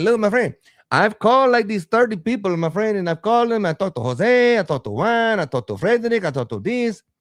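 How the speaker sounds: very high-pitched voice. Retelling what the caller said about who he phoned: imitating the caller. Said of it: "He's like".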